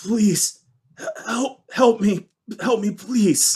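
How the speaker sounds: faintly croaked. Someone scratching at the other side of a door: very faint croak. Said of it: "very faintly croak out".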